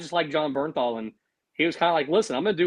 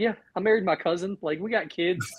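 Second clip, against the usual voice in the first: put-on serious tone, much higher pitch; 4 semitones higher than usual. Recounting a favorite scene, imitating Donnie being very serious. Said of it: "Donnie's like just very serious".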